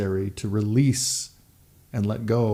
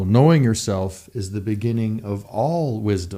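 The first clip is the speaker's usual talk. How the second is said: ordinary delivery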